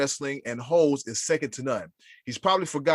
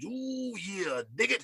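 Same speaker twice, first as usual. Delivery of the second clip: put-on gravelly wrestler promo voice, higher and quieter; 6 semitones higher, 9 dB quieter than usual. Reading out a listener's pick in his voice: Macho Man Randy Savage voice. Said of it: "everyone who read this did it in his voice".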